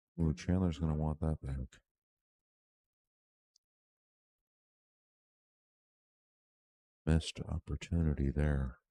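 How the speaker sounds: speaking in a whisper. Commenting on play with a player three feet away: whispering. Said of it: "so I'm trying to whisper".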